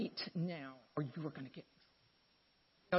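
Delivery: very quiet, low, hushed, stern, no-nonsense voice. Retelling what she said to the two who'd been fighting all day: mom-means-business voice. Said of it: "it's that very mom means business voice".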